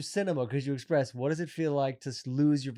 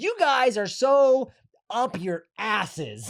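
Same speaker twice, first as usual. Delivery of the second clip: hesitating, stretched, pushed higher; 7 semitones higher, 5 dB louder than usual. Quoting a movie line to friends: spot-on Steve Carell impression. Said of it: "This is a spot on Steve Carell".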